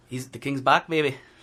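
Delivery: loud attempted Irish accent. With forty seconds to discuss the McGregor fight before signing off, do your best Irish impression. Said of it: "my best Irish impression".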